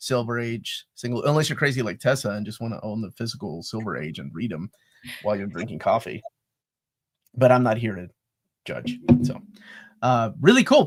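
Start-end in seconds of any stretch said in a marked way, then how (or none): 7.3-9.0 pointedly judgmental tone, dripping with judgment. Talking about someone who reads physical Silver Age comics with coffee, judgmental tone. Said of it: "he says in the most judgmental tone I've ever heard".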